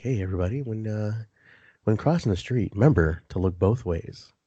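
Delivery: put-on sultry voice. Describing a podcast segment where Sam Meadowwood gives fatherly advice: Sam Meadowwood's sultry voice. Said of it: "With that sultry voice of his".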